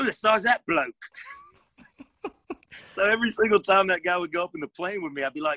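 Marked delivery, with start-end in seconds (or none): 0.0-0.9 higher put-on British accent. Retelling the first thing a guy said, imitating his british accent. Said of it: "He had a British accent".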